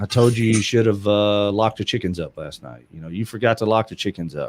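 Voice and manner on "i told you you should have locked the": plain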